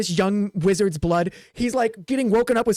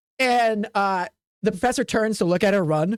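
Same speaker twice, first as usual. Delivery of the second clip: ordinary talk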